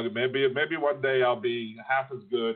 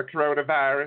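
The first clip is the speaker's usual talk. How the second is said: slight southern twang on "coronavirus"; 4 semitones higher than usual. Quoting how a younger son says a word, little southern twang. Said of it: "saying it with a little southern twang".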